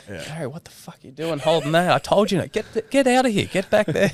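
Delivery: put-on angry telling-off. Retelling how a sailor lays into a crewmate, imitating an angry telling-off. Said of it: "I'm just going to let him have it".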